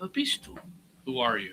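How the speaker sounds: quiet, gentle, not harsh. A player character speaking to a strange being, very softly, not harsh. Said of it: "I say very softly, not in a harsh tone".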